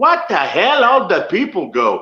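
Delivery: put-on heavy, laid-on Puerto Rican accent. Retelling a guy's remark heard by a silent crowd: Savio's thick Puerto Rican accent. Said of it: "a Puerto Rican guy with a very thick accent".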